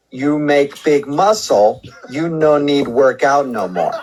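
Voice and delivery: very slow, simplified, dumbed-down broken English. Re-explaining to an annoyed caller so he can understand: dumbed-down talk. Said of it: "I'll say this in a way that maybe you can understand".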